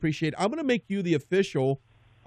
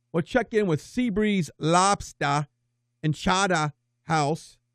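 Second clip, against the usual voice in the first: attempted put-on Boston accent; 3 semitones higher than usual. Show host teasing an upcoming segment before a break, boston accent. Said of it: "in the best Boston accent that I can get".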